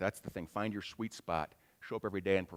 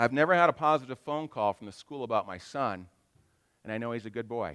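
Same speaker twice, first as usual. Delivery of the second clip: ordinary talk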